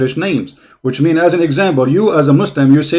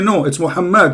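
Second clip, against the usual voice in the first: plain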